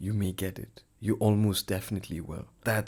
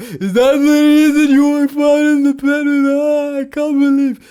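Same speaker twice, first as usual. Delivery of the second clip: mock crying, higher and louder; 18 dB louder than usual. Imitating a girlfriend accusing him of cheating: imitating girlfriend crying. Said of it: "Is my girlfriend crying".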